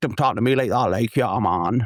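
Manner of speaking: rough, chav-style street version of Geordie accent. Describing Newcastle accents, the speaker demonstrates a chav Geordie accent. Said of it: "That's like the Raji kind of chav, chav version of the Geordie accent".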